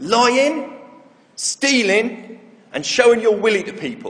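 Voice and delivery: put-on thick, confident West Country accent. A young boy confidently answers a question about the Ten Commandments, in a broad West Country accent. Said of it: "replied in a broad West Country accent".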